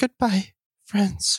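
high-pitched voice. Voicing a character left behind as the others leave: goodbye like a final farewell. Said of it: "Don't say it like that".

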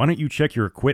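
ordinary talk

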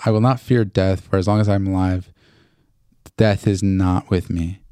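normal talking voice

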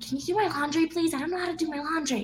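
high, mock yelled delivery. Retelling what a friend from the kids' bunker would do: imitating Miles yelling. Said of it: "he would yell at me".

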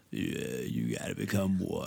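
put-on low, quiet growl with creaky vocal fry.

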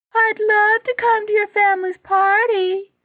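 very high-pitched mocking mimicry. Narrator reads Jackson repeating the other boy's words after he runs off: high-pitched mocking mimicry. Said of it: "mimicked Jackson in a high-pitched voice".

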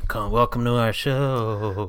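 put-on spooky ghost voice, disguised. Opening the group's show in a changed spooky ghost voice. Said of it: "You tried to change your voice".

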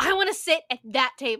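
loud, furious, pissed-off yell. Retelling a man who yelled at them at the register: mock-angry yell. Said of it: "unnecessarily pissed off tone I've ever heard".

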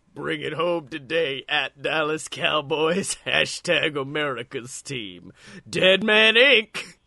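slow, drawn-out wrestler promo delivery. Reading a tweet aloud after being asked to do it in his voice: Undertaker voice. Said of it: "you gotta say that in his voice".

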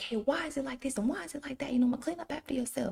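very high, exasperated, scolding yell. Retelling scolding a child over a messy room: imitating herself yelling. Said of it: "yelling and raising my voice at Kay".

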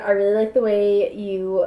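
ordinary delivery

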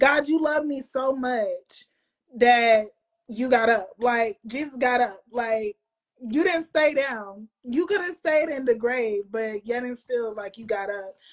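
emotional, choked-up voice, close to tears. Speaking about Jesus getting up from the grave, getting emotional, near tears. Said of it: "I'm getting emotional now".

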